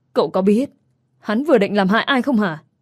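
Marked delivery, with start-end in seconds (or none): none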